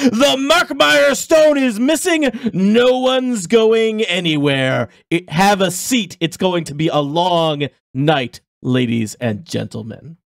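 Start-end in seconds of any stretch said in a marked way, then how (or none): 0.0-8.4 high, swooping, drawn-out mock yell, grand. Voicing a security captain announcing to a gala crowd: yelling at the top of his lungs. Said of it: "he yells at the top of his lungs".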